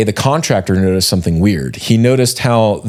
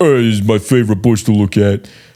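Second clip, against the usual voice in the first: put-on New Jersey accent. Imitating a creepy neighbor staring from a lawn chair: imitating a Jersey accent. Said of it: "he probably has a Jersey accent".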